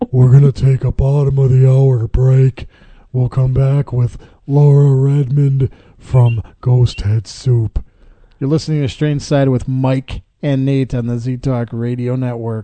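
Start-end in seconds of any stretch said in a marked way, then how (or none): 0.1-7.8 loud cartoon starfish character voice. Radio co-host taking the show to a break, in his Patrick Star voice. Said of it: "Let me try my Patrick Star voice here".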